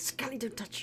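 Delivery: hushed stage whisper. Warning Scully in character not to touch the construct: hushed whisper. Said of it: "It's like a hushed whisper".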